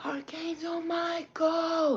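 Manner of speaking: shrill, very high screaming cry. Recounting a dream, the speaker re-enacts their own past call: retelling a scream. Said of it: "I screamed out".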